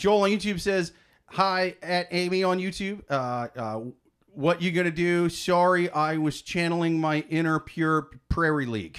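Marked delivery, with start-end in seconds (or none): none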